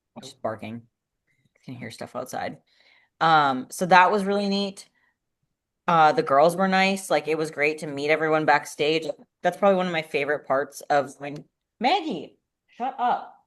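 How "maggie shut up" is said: shouting, higher pitch. Telling a dog to stop barking during a call: yelling at a dog. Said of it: "All we hear is you yelling".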